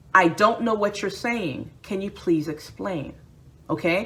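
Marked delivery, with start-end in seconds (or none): none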